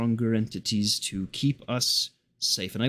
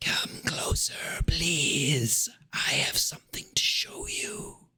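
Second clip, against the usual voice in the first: eerie, spooky, breathy whisper; 4 semitones higher, 3 dB quieter than usual. Voicing a whisper heard within each player's mind, whispering. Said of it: "you hear a whisper".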